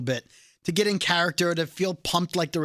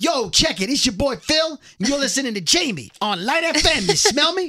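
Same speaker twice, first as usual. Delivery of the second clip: loud, pitched-up radio hype-man shout; 8 semitones higher, 5 dB louder than usual. Retelling an artist reading radio station liners: imitating an artist's hype-man voice. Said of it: "hype man".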